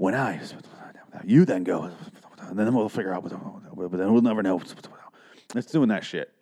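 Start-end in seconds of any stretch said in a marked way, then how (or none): 0.0-4.6 cartoon-style stage whisper. Recapping a show, the speaker mimics a character's line: imitating a cartoon whisper. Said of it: "like a cartoon whisper".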